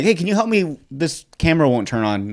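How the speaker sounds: ordinary talk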